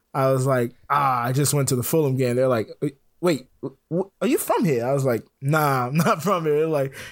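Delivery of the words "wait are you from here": fake, bad British accent, swooping and sing-song. Retelling people questioning his Fulham gear, in a bad British accent. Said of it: "I'm gonna do a bad British accent here".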